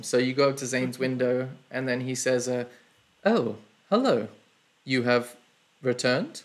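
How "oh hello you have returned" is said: startled, surprised tone with a swooping pitch. Voicing a shopkeeper greeting returning adventurers: sounding surprised. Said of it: "Why are you surprised?".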